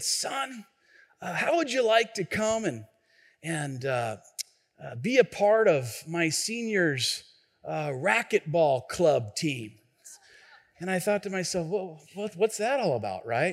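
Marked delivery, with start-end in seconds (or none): 0.0-9.7 rough rasping voice, halting, full of uh. Retelling what a man said to him in middle school, raspy voice. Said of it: "he had this real raspy voice".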